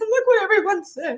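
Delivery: acted, overcome, emotional voice pitched very high. Retelling a message to mom about the survey responses: emotional voice. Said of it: "that's my emotional voice".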